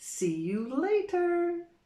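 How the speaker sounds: drawn-out, very high, slow, deliberate, careful delivery. Showing a learner the slower way to say a goodbye: said slowly. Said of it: "if you want to say it slow".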